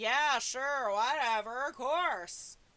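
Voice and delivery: put-on dismissive tone. Saying Bella sounds like her, acting out her own reply, in a mock-dismissive tone. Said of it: "I understand that tone".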